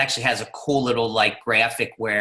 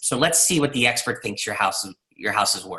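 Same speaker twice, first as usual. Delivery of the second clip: openly satirical, mocking, dry sarcastic tone. Quoting the line used with home sellers about the expert's value: quoting own sarcastic line. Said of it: "you can hear my satire, my sarcasm in that".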